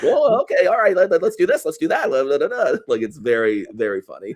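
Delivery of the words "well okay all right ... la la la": very high, wildly swinging, swooping cartoon character voice. Imitating an actor who sounds like a Rick and Morty character. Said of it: "he's just a Rick and Morty character the way he does".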